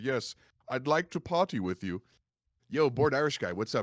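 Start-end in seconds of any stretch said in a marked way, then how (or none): 0.0-2.0 put-on jovial Swedish man accent, higher pitch. Retelling a roleplay character's greeting to a party: jovial Swedish accent. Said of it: "this jovial Swedish man".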